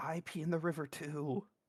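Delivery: soft, hushed half-whisper. In a tabletop game, [name] half-whispers back to another player's character: half-whispering. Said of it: "[name] will whisper back".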